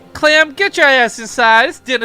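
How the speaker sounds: very loud, high, shrill rural Southern holler. Mocking the name Clem as a hillbilly name, calling Clem in a hillbilly voice. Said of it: "sounds like the name of a hillbilly".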